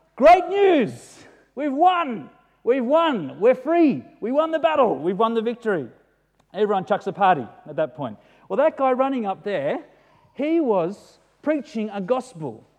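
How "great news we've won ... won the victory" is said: mock high, swooping joyful shout. Acting out a messenger arriving from battle: screaming out great news. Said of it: "he's screaming out".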